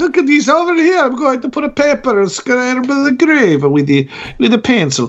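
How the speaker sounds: put-on generic European accent. Speaker at a grave, about to do a pencil rubbing, random european accent. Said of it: "My random European voice".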